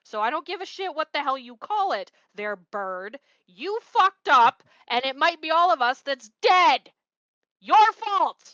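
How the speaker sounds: very loud, furious yelling. In a role-play, blaming another character for the danger, yelling angrily. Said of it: "I'm yelling at you".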